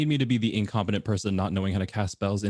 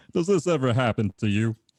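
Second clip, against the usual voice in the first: put-on dopey cartoon henchman voice. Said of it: "do it in the Kronk voice".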